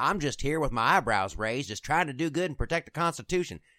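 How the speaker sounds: loud, folksy, put-on Texas accent. Mocking a Harvard-lawyer politician who plays up being from Texas, put-on Texas accent. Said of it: "Let's stop with the accent".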